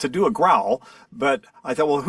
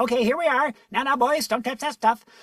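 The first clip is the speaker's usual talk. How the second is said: put-on high, fussy old professor voice; 8 semitones higher than usual. Recalling how he created a character for Nintendo, doing the Toadsworth voice. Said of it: "went up in, into that range".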